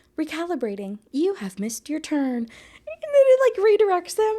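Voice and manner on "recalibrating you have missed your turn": robotic car navigation announcement voice. Retelling a car ride when the navigation pops up; robotic Siri navigation voice. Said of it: "the little Siri voice on the navigation pops up and it's like".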